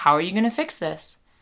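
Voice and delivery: ordinary delivery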